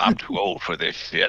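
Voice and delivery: soft, weary tired-cop voice. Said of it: "just straight up does a lethal weapon".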